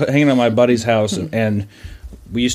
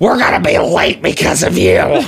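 mock harsh, pitched-up, nagging scolding voice; 6 semitones higher than usual. Retelling mom's words on being late for church: imitating mom's abusive tone. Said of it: "Real, real abusive tone, huh?".

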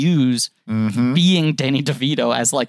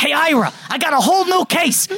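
put-on trailer-narrator voice, higher pitch; 14 semitones higher than usual. Retelling a second trailer where DeVito phones Ira: Danny DeVito impression. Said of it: "him walking up to a phone booth going".

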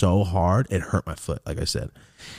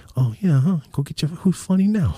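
high, menacing, needling tough-guy voice; 9 semitones higher, 4 dB louder than usual. Recalling wanting to confront a kid, the speaker does a Joe Pesci impression. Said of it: "like Joe Pesci shit".

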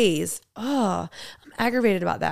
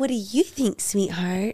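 mock baby talk, quieter; 4 dB quieter than usual. Imitating a woman talking to her husband at a restaurant: imitating baby talk. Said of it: "Like that?".

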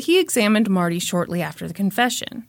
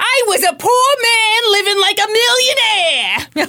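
put-on yelling, fired-up New York voice, higher and louder; 13 semitones higher, 5 dB louder than usual. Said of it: "Jerry was a little fired up".

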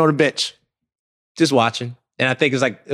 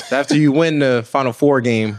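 plain

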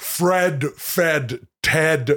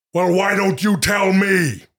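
angry, higher pitch; 4 semitones higher than usual. Asked to say a phrase in each listed tone, delivering it angry.

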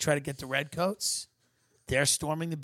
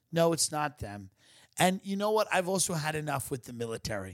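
ordinary delivery

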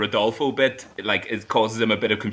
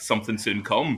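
plain

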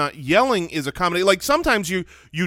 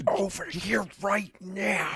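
hushed whisper pushed out like a shout; 3 semitones higher, 8 dB quieter than usual. Asked whether one can yell in a whisper, the speaker tries a shout whisper. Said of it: "That's a shout whisper".

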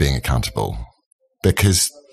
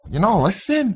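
bad fake Scouse accent, much higher; 12 semitones higher than usual. Retelling an audience member's heckle, the speaker tries again in a bad Scouse accent. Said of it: "that's even worse".

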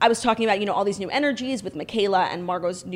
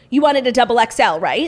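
blurted out very loud. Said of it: "he said it so loud".

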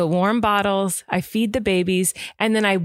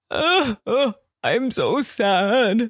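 very slow, drawn-out fake sob; 3 semitones higher than usual. Retelling what he said after sitting up, imitating a fake cry. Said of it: "Like a fake cry".

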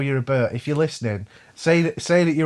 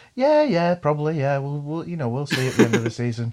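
mock self-satisfied, smug, nodding-along agreeable tone. Recalling being challenged about winning the league, retelling a smug reply. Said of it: "sort of smugly go".

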